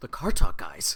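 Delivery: terrified, panicked voice. Retelling a cartoon mechanic's line to camera: imitating a terrified voice. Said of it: "the terror in his voice when he looks directly into the camera and he goes".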